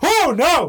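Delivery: scared little cry. Speaker retelling their reaction when a kid yelled at them, retelling a scared cry. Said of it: "it scared the crap out of me".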